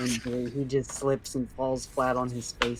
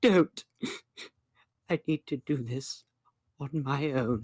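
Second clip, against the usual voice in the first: slow, tearful, held-back voice fighting back tears. Narrating the line of a humiliated man, holding back tears. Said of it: "you can tell in his voice that he's holding back tears".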